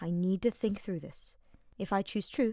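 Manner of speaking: ordinary delivery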